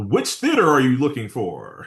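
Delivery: put-on phone announcer voice. Recalling calling a movie-times phone line: Movie Phone announcer voice. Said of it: "entertaining voice".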